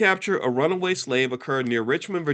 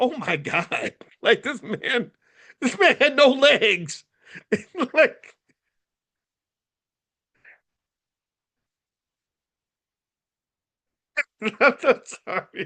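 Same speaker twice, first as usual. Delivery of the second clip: talking through laughter, higher; 10 semitones higher than usual. Talking about a man with no legs who ran away: laughing while talking. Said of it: "I shouldn't be laughing".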